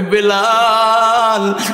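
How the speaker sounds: long, slow, drawn-out stretched voice.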